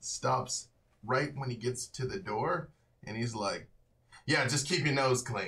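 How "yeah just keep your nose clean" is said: very loud voice. Retelling what a man said on stopping at the door, loud. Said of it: "very, like, loud".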